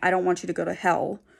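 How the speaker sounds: put-on tearful crying, pleading voice. Retelling a sister's plea in a restaurant: imitating someone crying. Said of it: "her crying".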